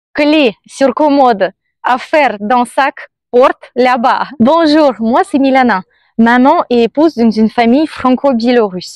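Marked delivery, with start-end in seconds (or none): 0.2-4.2 put-on thick Russian accent, slower. Telling how a woman ended things with a Belgian man: thick Russian accent. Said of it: "avec un grand accent russe".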